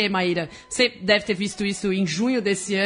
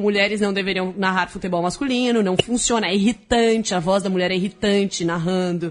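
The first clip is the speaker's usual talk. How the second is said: plain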